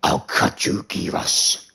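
rough, creaky, growling monster voice. Before a match, the speaker shows off a Baraka voice. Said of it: "I could do a pretty good Baraka voice".

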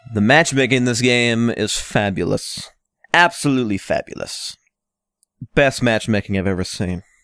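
plainly sarcastic, ironic, pitched low. Gamer reacting after knowing they'd get destroyed in a match: sarcastic. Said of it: "I'm being sarcastic".

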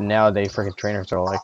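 ordinary talk

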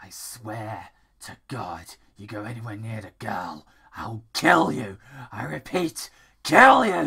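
evil-sounding, sinister, creepy voice. A character protecting a little girl warns someone, in a creepy voice. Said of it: "Don't mind the creepy voice. ... It may sound evil, but I'm not".

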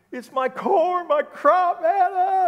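very high, very loud, very slow sobbing wail. Telling a joke, acting the farmer's answer to a passerby: acted crying while talking. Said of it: "and he's crying".

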